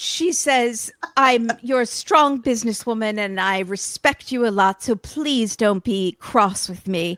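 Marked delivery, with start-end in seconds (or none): 1.2-7.2 imitated, put-on British accent. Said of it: "She's British now?".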